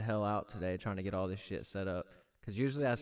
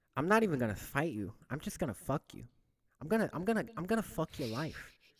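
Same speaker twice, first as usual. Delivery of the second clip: high-pitched, lisping voice; 6 semitones higher than usual. Retelling the Mike Tyson interview in his voice: Mike Tyson voice. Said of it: "You're really good at the voice".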